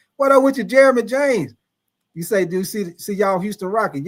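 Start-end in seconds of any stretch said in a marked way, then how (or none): none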